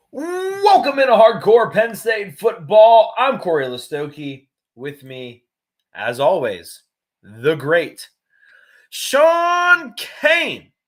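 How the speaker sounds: very loud, very slow, booming, fired-up delivery. Host opens the show and greets the co-host, with lots of oomph. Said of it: "I like you put a lot of oomph into that one".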